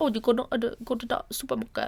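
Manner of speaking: put-on sing-song English accent drifting Jamaican. Imitating how people in England talk, in an English accent that sounds Jamaican. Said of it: "you sound like a Jamaican bobsledder".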